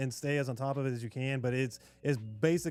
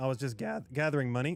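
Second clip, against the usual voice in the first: breaking, cracking voice. Telling a story about gathering money the other day, voice cracking. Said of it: "my voice is cracking".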